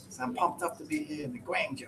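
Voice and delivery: put-on Boston accent. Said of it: "He's got a nice Boston accent".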